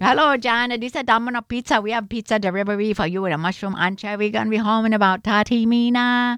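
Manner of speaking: disguised voice with a put-on Chinese accent. Prank caller disguising his voice as a pizza place phoning Jan: put-on Chinese accent. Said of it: "disguise his voice".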